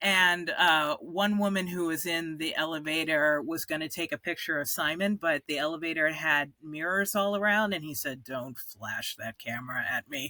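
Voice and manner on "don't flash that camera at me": low, hushed, menacing voice with dangerous undertone. Retelling what Simon said in an elevator: imitating Simon's low dangerous voice. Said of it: "that low, dangerous way that Simon has".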